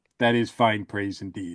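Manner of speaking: put-on deadpan hero voice. Retelling a scene where Batman thanks Chief O'Hara: deadpan Batman line. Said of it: "with a straight face just says".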